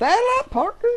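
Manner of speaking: high, loud, belted cowboy call.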